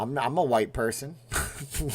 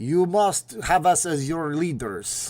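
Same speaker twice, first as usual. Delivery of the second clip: slow, pitched-up put-on Russian accent; 5 semitones higher, 3 dB louder than usual. Retelling what the Soviet Union told its people, in a put-on Russian accent. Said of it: "That's my Russian accent".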